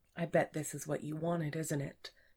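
plain reading voice

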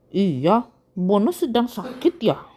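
plain

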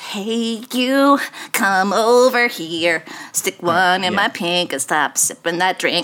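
small, sinister, lurking creepy voice. Demonstrating the voice for a proposed bit, in a creepy little voice. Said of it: "I have like a creepy little voice like this".

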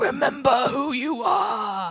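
very loud, booming lion voice. Telling an audience about a favourite film scene, quoting a Mufasa lion voice. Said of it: "That was my lion voice".

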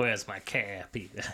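put-on very low, hushed, soft voice with Boston accent. Voicing a line aimed at peter, in a boston accent. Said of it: "Boston accent".

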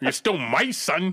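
slow, deliberate voice, weighing every word. Retelling what an actor told his son, Denzel Washington impression. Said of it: "I can't do a Denzel".

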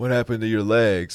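put-on Southern movie character voice. Doing Forrest talking to Lieutenant Dan: Forrest talking to Lieutenant Dan. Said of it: "I can do Forrest, like, talking to Lieutenant Dan".

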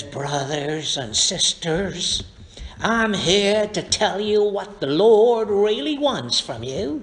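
TV preacher sermon-style preaching delivery. Retelling a TV preacher seen while on vacation, imitating a TV preacher. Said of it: "he was preaching like this".

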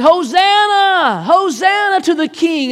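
very slow, lingering, drawn-out proclaiming voice. Retelling how crowds greeted an arrival: imitating a crowd shouting. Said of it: "they were shouting".

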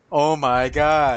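sarcastic, mocking voice. The speaker slips into a sarcastic voice and can't stop: sarcastic voice. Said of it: "I should stop this sarcastic voice right about now".

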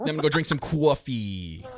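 Queens-style New York accent. Playing along as a co-host mocks how the speaker talks, in a Queens accent. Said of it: "but that's that Queens accent".

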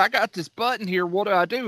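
ordinary talk

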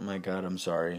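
ordinary delivery

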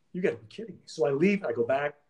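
ordinary talk

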